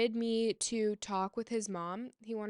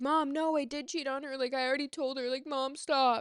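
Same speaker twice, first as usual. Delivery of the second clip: put-on crying voice; 4 semitones higher, 3 dB louder than usual. Retelling what he said to his mom on the phone, imitating someone crying. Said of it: "he's like crying like".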